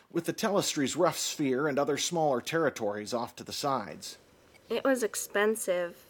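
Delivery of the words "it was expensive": sheepish, embarrassed, self-conscious, slightly high pitch. Shauna explains herself; self-conscious. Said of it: "Shauna said self-consciously".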